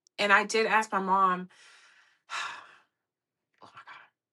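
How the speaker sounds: on the verge of tears. Recalling a mother's dying wish, on the verge of tears. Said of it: "I'm not gonna cry".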